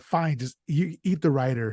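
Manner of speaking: ordinary talk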